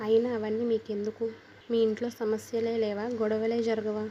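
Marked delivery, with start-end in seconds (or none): none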